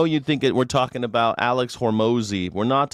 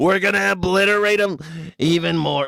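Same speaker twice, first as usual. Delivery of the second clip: big, exaggerated cartoony voice, pitched up; 6 semitones higher than usual. Repeating the line again after laughing: imitating Donald Trump. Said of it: "talk like a Looney Tunes character".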